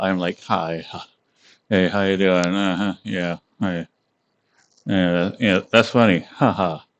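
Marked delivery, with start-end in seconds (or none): 0.4-2.5 laid-back, easygoing, super mellow, low-energy delivery. Showing how the speaker sounds normally in real life, super mellow, low-energy. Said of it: "normally, like in real life, I am super mellow".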